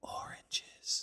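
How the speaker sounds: sudden, very hushed, very quiet whisper. Hypothetical answer to a favorite-fruit question, out of nowhere: whispered 'oranges'. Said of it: "if you whisper out of nowhere".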